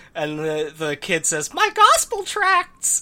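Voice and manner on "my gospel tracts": very high-pitched cartoon-character voice. Reading a comic panel aloud, the kid's line in a Minnie Mouse voice. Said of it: "I assume in that voice".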